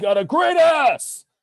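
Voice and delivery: loud, very high-pitched shout. Asked by the other speaker for an Al Pacino impression: Al Pacino impression. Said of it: "do your best, uh, Al Pacino impression".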